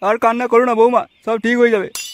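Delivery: put-on deep elderly fatherly voice.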